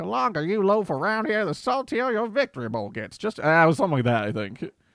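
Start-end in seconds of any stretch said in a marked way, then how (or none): 0.0-3.2 put-on high old-man voice with southern twang. Recalling the voice given to a character: older man southern twang. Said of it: "older man voice, some southern twang on there".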